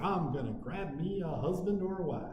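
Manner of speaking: put-on West Tennessee drawl. Imitating a student going to university to find a spouse: put-on west tennessee accent. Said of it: "I don't know why I used that accent".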